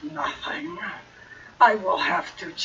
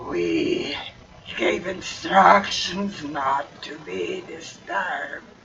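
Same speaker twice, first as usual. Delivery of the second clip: half-heard, hollow, echoing voice as if down a tube; 3 semitones lower than usual. A nightmarish voice speaks, half in your mind, half heard: hollow, echoing voice. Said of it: "hollow, echoing voice that says".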